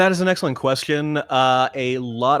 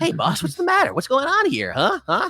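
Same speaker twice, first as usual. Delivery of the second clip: very high, swooping weaselly voice; 13 semitones higher than usual. Showing a voice for an audio drama character described as weaselly: weaselly power-grasping guy voice. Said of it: "I'll give him a, a voice like this".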